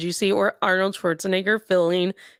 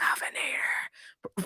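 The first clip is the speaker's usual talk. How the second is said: soft, hushed, breathy whisper under the breath. Retelling waiting outside the governor's office: retelling a whisper.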